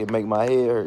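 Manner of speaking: ordinary delivery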